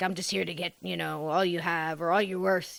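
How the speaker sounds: put-on pirate voice. Retelling a ghost's words to a man waking on the beach: imitating a pirate voice. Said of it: "he kinda spoke like a pirate to him".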